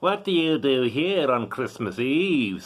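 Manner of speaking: severe, demanding, stern goblin voice. Narrator reading a Christmas story, the Goblin confronting a gravedigger, stern goblin voice. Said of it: "said the Goblin sternly".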